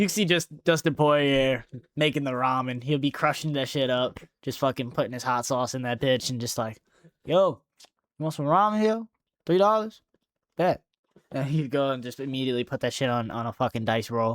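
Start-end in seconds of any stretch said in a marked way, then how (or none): 7.2-10.8 higher-pitched street hustler voice, selling it hard.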